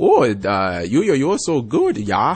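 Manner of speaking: put-on swooping, drawn-out, over-the-top German child's accent. Imitating a German kid character from a show: Uter from The Simpsons voice. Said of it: "who talks like this".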